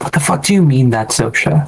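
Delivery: whispering. Leaning into a doorway in character, asking about a revelation: whisper. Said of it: "I'll whisper".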